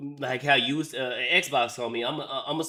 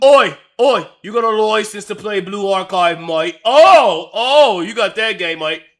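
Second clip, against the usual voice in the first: very loud, barking, pitched-up British cop voice; 8 semitones higher, 15 dB louder than usual. Imitating a UK officer stopping a traveller at the border: imitating a UK officer. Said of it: "in the U K and then get arrested".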